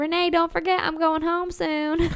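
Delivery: put-on hint of rural Southern accent. Retelling what a cashier said at Walmart: imitating her Southern accent. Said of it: "That was really good, actually. What the, the way you said "soon."".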